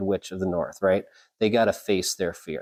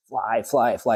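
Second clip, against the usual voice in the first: ordinary talk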